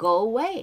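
"away" stressed on the second syllable, -way. English pronunciation explained in Korean, stress on -way of away. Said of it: "발음이 액센트가 뒤에 있어서요".

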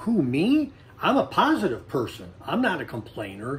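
ordinary talk, nothing marked

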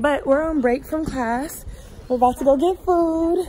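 breathless, out of breath. Speaker on a class break after running to turn in a paper, out of breath. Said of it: "I'm out of breath because I had to just run".

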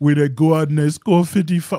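deep-pitched, loud voice. Mocking a player's excuse to another speaker: horrible Joel Embiid impression. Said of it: "that was a horrible impression".

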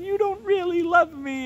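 put-on weepy pleading whine, very high, tearful. Retelling a story where she pleads with him, imitating her crying. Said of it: "So she starts crying to him".

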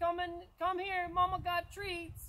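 high, loud woman's yell, projected outward. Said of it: "lady yelling out the, the door".

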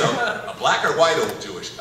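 plain

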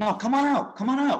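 very high, loud hollering call. Playing a character calling the others to the main room: in-character yell. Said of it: "I yell".

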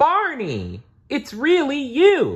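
joyful, very high, swooping happy shout. A narrator reading a story voices Lori greeting Barney, shouting happily as Lori. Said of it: "Lori shouted happily".

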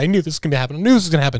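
put-on frightened, dreading, fretful voice. Acting out how another speaker will react when stopped on the road: imitating someone scared. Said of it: "you're gonna be so scared".

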